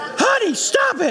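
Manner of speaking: awful fake woman's voice, very high. Acting out the mom's words to her husband, in a terrible put-on woman's voice. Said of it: "That's a terrible woman's voice".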